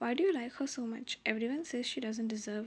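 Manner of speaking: ordinary delivery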